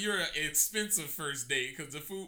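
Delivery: plain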